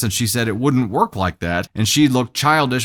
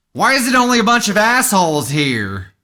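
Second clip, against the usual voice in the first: very high, disdainful, scornful motherly woman voice; 10 semitones higher, 4 dB louder than usual. Imitating the mom arriving among her daughter's friends: imitating the mom. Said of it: "you're gonna get there and be like".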